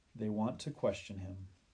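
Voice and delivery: ordinary talk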